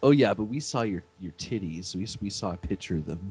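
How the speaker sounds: put-on smug, gloating, taunting voice. Retelling a wrestling argument, imitating Gail Kim: smug Gail Kim imitation. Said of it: "all smug".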